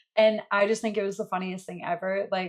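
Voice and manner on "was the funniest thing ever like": ordinary talk, nothing marked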